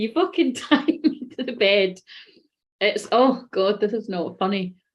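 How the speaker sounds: uncontrollable laughing. Describing a scenario that is not funny, yet unable to stop laughing. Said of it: "I can't stop laughing".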